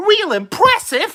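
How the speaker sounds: squeaky, very high-pitched product-reviewer voice. Imitating the Project Farm host's catchphrase: Project Farm impression. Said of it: "that impersonation of Project Farm".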